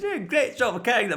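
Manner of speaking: put-on heavy Scottish accent, laid on thick, quick and high. Retelling a man's line to a woman on every take, in a thick scottish accent. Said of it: "in that like thick Scottish accent".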